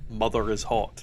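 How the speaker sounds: ordinary talk, nothing marked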